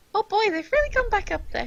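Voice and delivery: loud, squeaky, sing-song voice. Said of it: "I was starting to hear Mickey Mouse".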